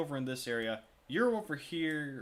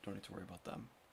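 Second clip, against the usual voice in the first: barely audible, hushed, very quiet mumble; 7 semitones lower, 15 dB quieter than usual. Narrating the scene, the storyteller voices a man who shrugs and turns away: muttering to himself. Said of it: "you hear him on himself".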